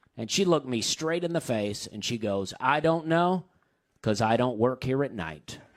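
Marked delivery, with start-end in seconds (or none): 2.6-5.6 dead serious, completely earnest, matter-of-fact, no joke. Retelling a fish expert's answer to a question: imitating a dead serious reply. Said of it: "Dead serious, too".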